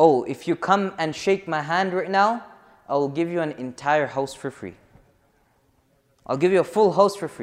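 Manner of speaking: ordinary talk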